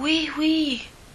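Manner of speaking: tiny, small, high little voice. Mine answers Pocah, who asks whether she is all right, in a small voice. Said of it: "répond-elle d'une petite voix".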